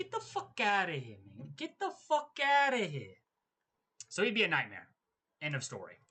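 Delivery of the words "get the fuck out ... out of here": put-on voice, high, pitch swooping widely. Imitating an imagined boss yelling at an employee: sounding like Canelo. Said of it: "I sound like Canelo".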